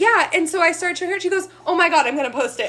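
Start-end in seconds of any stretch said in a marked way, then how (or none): 1.7-2.7 acted-out, excited outburst. Retelling how a woman reacted about posting it, imitating her excited reaction. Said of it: "she got all excited".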